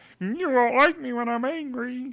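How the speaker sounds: pitched way up and belted. Speaker picks Kermit for their team and voices him: terrible Kermit impression. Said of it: "That's a terrible Kermit impression".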